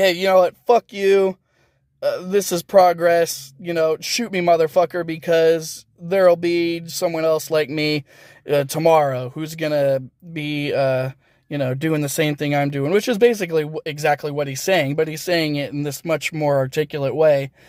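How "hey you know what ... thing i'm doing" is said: usual speaking voice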